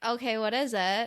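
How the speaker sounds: ordinary delivery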